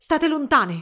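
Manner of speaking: yelled at full voice, loud and high. Albert shouts at the ghostly brides closing in on him; shouted. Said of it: "gridò Albert".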